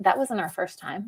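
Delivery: soft, casual, offhand, nonchalant aside. Retelling what a man leaning on a dresser said, mimicking a nonchalant remark. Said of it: "he just very nonchalantly says".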